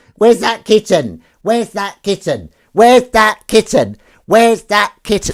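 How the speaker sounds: shrill, very high cat voice. Calling for the kitten, in the voice people put on for cats. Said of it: "humans always put on their cat voice".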